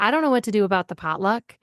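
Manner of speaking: normal talking voice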